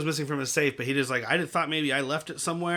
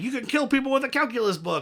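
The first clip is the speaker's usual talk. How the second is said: mock shouted, high-pitched screaming outburst; 8 semitones higher than usual. Recounting a scene, retelling Light's scream at him. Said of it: "Light screaming at him like".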